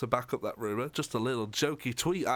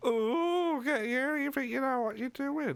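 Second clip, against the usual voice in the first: very high, silly puppet voice; 13 semitones higher than usual. Co-host discussing a news rumour with the other host: Zippy voice from Rainbow. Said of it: "You sounded just like Zippy from Rainbow".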